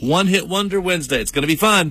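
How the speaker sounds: high-pitched, hyped radio DJ announcer voice.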